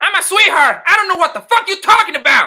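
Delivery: shrill, very high, very loud shouting outburst. The speaker acts out what she says, doing a Sherelle impression. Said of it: "Is that how she sound? ... You sound like that, Sherelle?".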